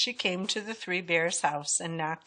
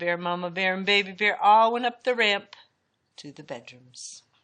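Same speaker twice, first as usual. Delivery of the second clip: ordinary delivery, nothing marked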